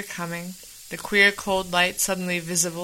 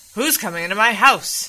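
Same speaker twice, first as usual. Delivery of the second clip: furious, loud, angry voice; 3 semitones higher, 5 dB louder than usual. Henry, hearing heavy footsteps come into his house, demands angrily. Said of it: "Demanded Henry angrily".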